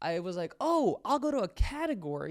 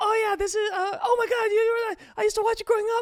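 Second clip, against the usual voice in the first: mock stumbling, starstruck, high, loud freaking-out babble; 14 semitones higher, 8 dB louder than usual. Retelling a streamer's reaction to a surprise raid: imitating someone freaking out. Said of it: "And she started freaking out".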